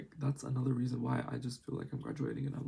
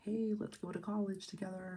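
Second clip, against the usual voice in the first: high, put-on typical American voice and accent; 7 semitones higher, 4 dB quieter than usual. Imitating american people inviting someone to college: impression of american people. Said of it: "that's my impression of American people".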